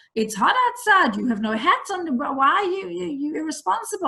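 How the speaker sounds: put-on shouting. Retelling how a woman scolded them over kids without hats: imitating someone shouting. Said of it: "shouting at me in Hebrew".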